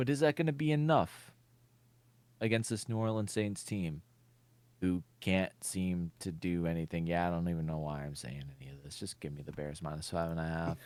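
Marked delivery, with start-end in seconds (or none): 7.1-10.8 downcast, deflated, sad, low and quiet. Discussing the bears–saints game with co-hosts, sad. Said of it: "you sound so sad about that".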